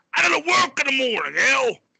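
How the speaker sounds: very high angry dad outburst. Retelling a dad coming down the steps: imitating a dad flipping out. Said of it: "fucking flipping, dude".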